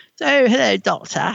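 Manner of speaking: put-on high, creaky, childlike kiddie voice. Imitating how the actress plays Susan on audio: kiddie Susan voice. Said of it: "that sort of kiddie".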